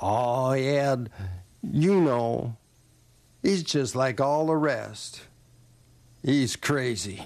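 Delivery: slow Louisiana Southern drawl, words stretched out. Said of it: "And he drawled".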